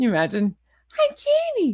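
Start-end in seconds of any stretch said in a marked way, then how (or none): 1.0-1.7 put-on very high, babyish baby talk voice. Mocking how a woman talks, imitating a baby voice. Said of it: "the Jamie baby voice".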